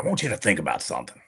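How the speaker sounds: put-on low-pitched rural Virginia accent. Quoting a Marine who called him up one day, rural Virginia accent. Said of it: "he's got this great accent".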